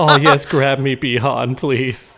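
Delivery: mock begging, pleading tone. Acting out how a female character would act toward Bi-Han: imitating a character's pleading. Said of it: "She'd be like".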